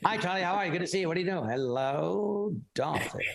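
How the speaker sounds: put-on rapid-fire, high old-movie patter, "hello" stretched. Telling their mom how people talk in those movies, speaker imitates fast movie-style talk. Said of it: "They speak so fast".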